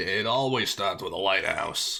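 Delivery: slow, drawn-out Brooklyn lunch-lady voice. Voicing a game character's line, Elizabeth as an old Brooklyn lunch lady. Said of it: "She sounded like like an old Brooklyn lunch lady".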